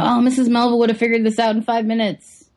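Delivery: acted, smug, superior, talking-down condescending tone. Retelling a character's line to the other speakers: imitating a condescending tone. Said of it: "that kind of condescending".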